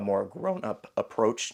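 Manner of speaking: voice cracks on the word "grown-up". Addressing viewers who watched her grow up, voice cracking. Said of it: "My voice just cracked".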